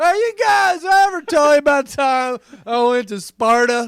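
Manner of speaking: put-on very loud, very slow drunken drawl. Voicing a drunk, leaning figure on a throne: put-on drunk voice. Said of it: "He's fucking drunk".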